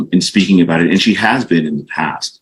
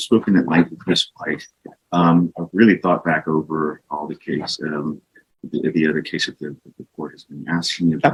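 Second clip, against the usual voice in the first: barely audible, very quiet half-whisper; 2 semitones lower, 7 dB quieter than usual. Speaking to the judge in court about the case, half-whispering. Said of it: "you're whispering".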